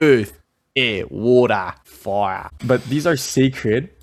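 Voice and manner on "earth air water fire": fake Australian accent, raised. Speaker listing the Zoroastrian sacred elements, in a fake Australian accent. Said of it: "that was my Australian accent".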